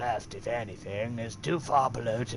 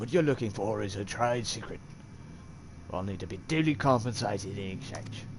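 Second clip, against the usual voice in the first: put-on British bandit voice. In a role-play scene, the speaker voices a brigand; british brigand voice. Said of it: "I'm doing a brigand voice for him".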